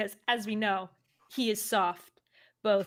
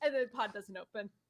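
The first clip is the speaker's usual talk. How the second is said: normal talking voice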